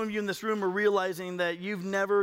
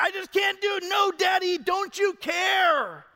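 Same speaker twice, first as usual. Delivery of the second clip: put-on very high, slow, drawn-out child's begging voice; 11 semitones higher, 6 dB louder than usual. Father retelling his upset son's words to him: imitating a child pleading. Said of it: "And he's just like".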